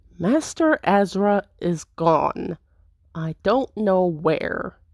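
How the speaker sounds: through gritted teeth. Answering an intruder's demand, a narrator voices the character speaking through gritted teeth. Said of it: "speaking through gritted teeth".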